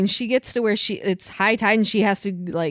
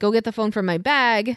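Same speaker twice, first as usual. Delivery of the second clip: put-on scream, acted as distant yell; 2 semitones higher than usual. Describing a movie scene, quoting a woman on the beach, mimicking her screaming. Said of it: "She's like screaming".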